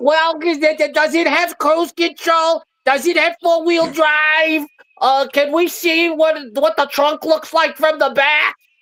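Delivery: put-on very high voice of an old couple. Retelling two buyers questioning a car salesman: imitating an old couple. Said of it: "they were like a fucking old couple".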